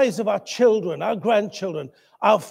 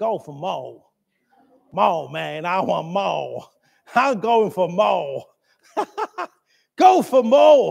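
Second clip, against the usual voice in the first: slow put-on South American accent. Speaker repeats a favorite saying, trying it in a South American accent. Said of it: "It sounds good in a South American accent".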